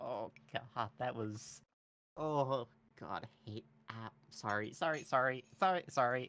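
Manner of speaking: acted, slow sobbing through the words. Voicing a character who breaks down after escaping: crying in character. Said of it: "just start crying".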